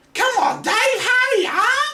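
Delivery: put-on very high voice with Australian accent. Voicing a kea urging dave to hurry up: australian accent. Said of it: "Was that an Australian voice I hear?".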